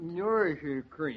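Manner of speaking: garbled mumble, as if mouth full. Telling what went in the mouth: mouth full of cream. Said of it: "I can't understand a word you're saying".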